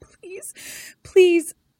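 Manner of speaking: very high-pitched, sobbing, pleading voice. Retelling a scene where she is crying and pleading: imitating someone crying. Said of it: "And she's like crying".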